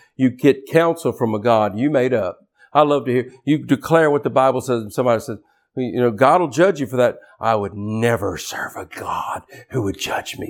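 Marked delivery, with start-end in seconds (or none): 7.4-10.5 put-on whispered, hushed, breathy, offended indignation. Imitating people who reject a God who judges, mock-indignant. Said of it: "That's the indignant voice".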